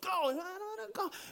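put-on childlike crying whine. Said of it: "I'm like".

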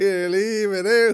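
high, loud, drawn-out shout. Act out a woman across O'Connell Street calling to a lad in a fight, imitating her shouting. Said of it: "she shouted at the other lad".

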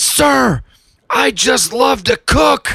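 play-acted, high, shrill, slow, drawn-out, full-lunged scream. Retelling how a young competition winner screamed in the speaker's face: imitating a young man screaming. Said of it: "screams at the top of his lungs".

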